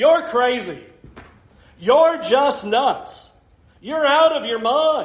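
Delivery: mock sudden outburst. Preacher retelling how Festus interrupted a speaker; retelling Festus's loud shout. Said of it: "Festus just shouts out with a loud voice".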